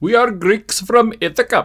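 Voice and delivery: mock Indian accent, pitched high.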